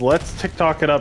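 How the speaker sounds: usual speaking voice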